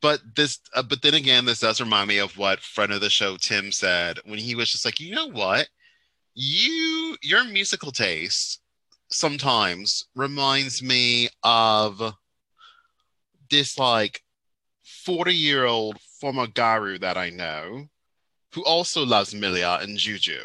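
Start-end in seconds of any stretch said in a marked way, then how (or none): 5.0-20.5 attempted Australian accent. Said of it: "That was me trying to do an Australian accent".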